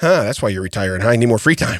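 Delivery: mock deadpan delivery. Retelling a remark made to a doctor: imitating own deadpan remark. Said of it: "I literally look at him with a straight face".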